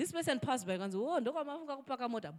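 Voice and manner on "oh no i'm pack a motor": mocking, sarcastic remark tossed off in passing. Retelling a passerby's mocking remark outside church: imitating someone sarcastic. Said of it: "he was sarcastic".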